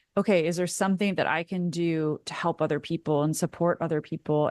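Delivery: ordinary delivery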